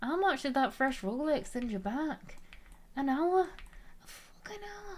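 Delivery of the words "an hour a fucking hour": put-on high-pitched Scottish accent, especially on hour. Talking to a stream chat, the speaker demonstrates a phrase: Scottish accent. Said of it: "I also say an hour in a Scottish accent too".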